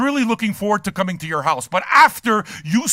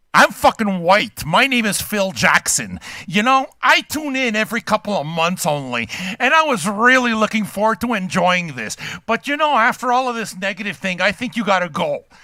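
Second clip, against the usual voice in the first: normal talking voice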